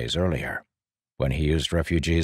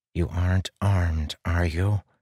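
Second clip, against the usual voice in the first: hissing, wary, tense. Leading a group toward an inspection post, he asks his companion, hissed under his breath. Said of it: "he hissed under his breath".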